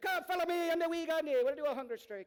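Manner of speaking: loud, very high little leprechaun voice. Imagining what someone he was listening to would say, in a leprechaun voice. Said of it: "He'd be a good little leprechaun".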